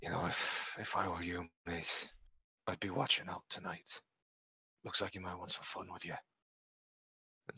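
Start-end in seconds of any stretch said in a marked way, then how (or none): 0.0-6.1 private, low, hushed, murmured voice. Voicing a character who leans down behind another: low voice. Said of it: "just sort of low voice".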